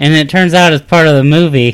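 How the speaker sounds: ordinary delivery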